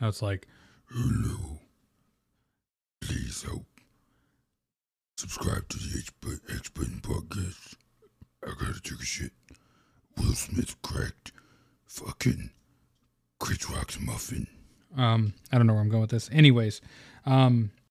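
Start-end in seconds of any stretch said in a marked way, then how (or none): 0.9-14.5 odd, whispered, hushed, breathy stone voice. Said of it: "now it sounds weird".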